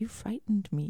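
really small, tiny, high, wee voice. Recalling a co-star speaking after a hospital scene, imitating a really little voice. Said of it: "in a really little voice".

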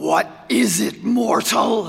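rough-edged, menacing growl. Reading a story, Death demands an answer from Albie, growling. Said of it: "Growled the Reaper".

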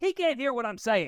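mock full-lung, all-out shout, very high. Recounting a dinner with an aunt, the speaker is retelling an aunt's yell. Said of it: "yells at the top of her lungs".

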